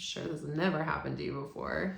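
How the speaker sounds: deadpan, dry, tongue-in-cheek sarcasm. Speaking to men about a stressed partner, sarcastic. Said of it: "I say sarcastically".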